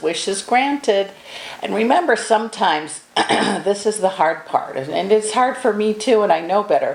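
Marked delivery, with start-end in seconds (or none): none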